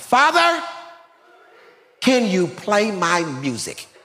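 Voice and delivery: happy, high, drawn-out holler. Retelling the son hollering a request in the truck: imitating his son hollering. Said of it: "Hassan hollers out".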